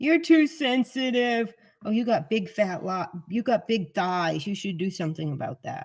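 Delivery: put-on snide, belittling, mean, cutting tone. Retelling the mean things a mother would say: imitating mother saying mean things. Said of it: "she would say mean things".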